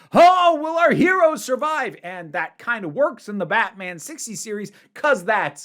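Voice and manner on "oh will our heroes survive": very high, loud, dramatic announcer voice. Mocking a TV cliffhanger, in a sixties Batman narrator voice. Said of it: "this big dramatic voice".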